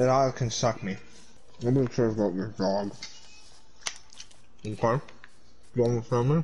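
low, hushed mumble with a full mouth. Ranting to the others about the dog, talking with mouth full. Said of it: "Your mouth is full of food".

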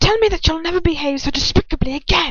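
high, menacing words hissed out. He grinds his heel into the narrator's wound, hissing the words. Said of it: "I hear him hiss".

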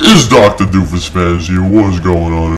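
very deep, made-up put-on voice. Trying out an intro greeting to fans, the speaker uses a really deep voice. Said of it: "I need, like, a fucking really deep voice for that".

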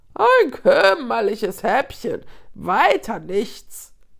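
loud, swooping, jeering, contemptuous sneer. A third hyena peers at Nuru over the hill; jeering. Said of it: "höhnte eine dritte".

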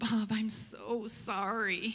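weak, frail, crawling, very slow voice. Retelling a caller apologizing on the phone: imitating a frail voice. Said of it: "this frail voice just kinda crawls out of the phone".

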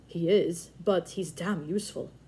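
ordinary delivery

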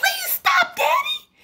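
very high, laughing, joyful squeal. Tickled by her father, a girl begs him to stop, squealing joyfully. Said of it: "she squealed joyfully".

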